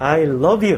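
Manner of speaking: "love" picked out and heavily stressed. Explaining emphasis in speech, spoken example with stress on love. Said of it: "우리가 말로 할 때 이렇게 찝을 때 있잖아. I love you 이렇게 할 때".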